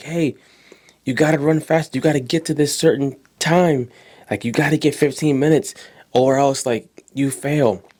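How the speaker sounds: imitated yelling voice. Retelling how coaches and teachers yelled at the walking kid: imitating teachers yelling. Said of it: "the coaches and the teachers are yelling".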